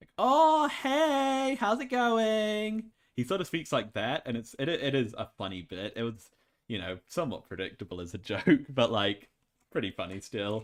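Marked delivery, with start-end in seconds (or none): 0.2-2.9 cute, very high, slow, drawn-out voice. Describing a grunting character who then speaks; cute high-pitched voice impression. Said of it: "quite like a high pitched".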